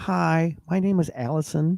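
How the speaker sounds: put-on high, over-enunciated St. Louis accent. Showing how she places a pickup order, imitating Allison's restaurant voice. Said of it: "Very overpronounced, very saint Louis".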